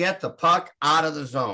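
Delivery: normal talking voice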